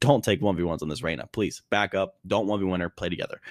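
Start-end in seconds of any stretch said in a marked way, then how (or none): none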